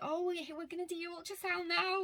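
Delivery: play-acted, very high, thrilled delivery. Retelling what a clinic worker said about the ultrasound: imitating someone excited. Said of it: "she was so, so excited".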